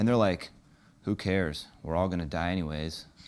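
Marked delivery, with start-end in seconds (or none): 1.0-3.0 put-on couldn't-care-less apathy, really low voice. Acting out a friend who flunked a test: imitating an apathetic friend. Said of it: "That's kinda like apathy".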